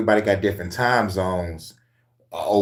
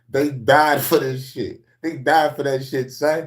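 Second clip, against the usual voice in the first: put-on New York street accent, pitched up; 6 semitones higher than usual. A speaker from Detroit giving a shout-out to the Gnostics, in a put-on New York accent.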